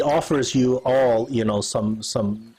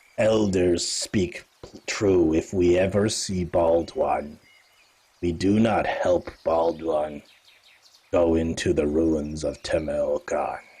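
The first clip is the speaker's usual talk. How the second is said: grave, very serious, very low voice; 7 semitones lower than usual. A character repeats what the elders say about the Bald One, very serious. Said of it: "she's very serious".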